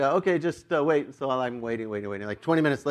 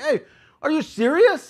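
very high, agitated, worked-up, raised voice; 13 semitones higher, 5 dB louder than usual. Retelling calling out to a guy hurrying to the lounge, replaying own agitated call-out. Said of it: "my tone's up, I'm agitated, a little louder".

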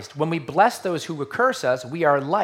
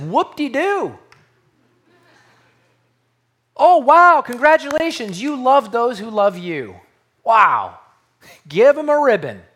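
heavily sarcastic, loud, swooping, mock admiring tone; 8 semitones higher, 7 dB louder than usual. Paraphrasing Jesus looking at his crowd: sarcastic Jesus paraphrase. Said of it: "He's not that sarcastic".

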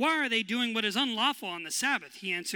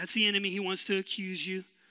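normal talking voice

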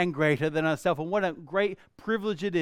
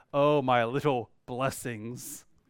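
play-acted, ironic, sarcastic tone; 4 semitones lower than usual. Acting out a parent looking at their kids: imitating a sarcastic parent. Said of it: "go sarcastically".

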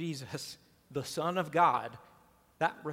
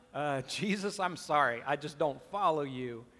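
ordinary talk

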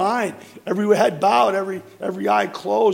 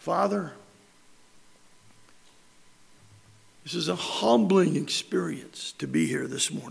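weakened, faint voice, quieter; 3 semitones lower, 7 dB quieter than usual. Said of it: "I don't know why my voice weakened".

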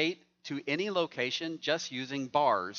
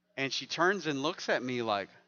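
ordinary delivery

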